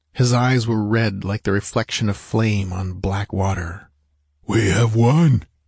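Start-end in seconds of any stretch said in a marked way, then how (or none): 4.5-5.4 stunned, dazed, croaking voice. Reading a man's line in a story after a fight, croaked dazedly. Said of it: "he croaked dazedly".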